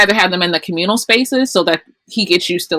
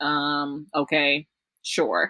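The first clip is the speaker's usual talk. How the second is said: dry, mock-agreeable sarcastic tone; 4 semitones lower, 11 dB quieter than usual. Retelling the mom's reply about a vegetarian child: imitating a sarcastic reply. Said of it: "But it was so sarcastic".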